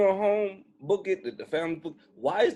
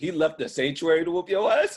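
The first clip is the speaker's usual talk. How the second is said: words broken up by laughing. Speaker reacts to a story about a stray elephant, laughing while talking. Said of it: "I can't stop laughing".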